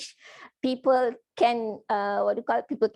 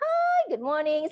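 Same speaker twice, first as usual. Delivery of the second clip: bright, higher-pitched, said through a smile; 5 semitones higher than usual. Teaching how a greeting changes when you smile: smiling voice. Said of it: "your pitch is also different".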